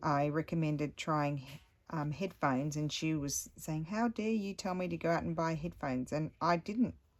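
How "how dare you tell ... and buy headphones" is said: normal talking voice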